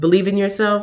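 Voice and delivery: plain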